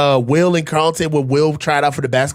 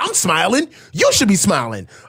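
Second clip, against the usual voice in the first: put-on sing-song, overly upbeat, pushy cheerfulness; 4 semitones higher than usual. Mocking people with toxic positivity: mock toxic positivity. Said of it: "I can't stand toxic positivity".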